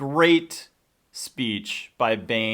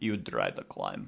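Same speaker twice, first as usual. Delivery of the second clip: creaky, rough delivery; 9 dB quieter than usual. Quoting a favorite line from the translator in the movie. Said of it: "the translator guy when, just when he says".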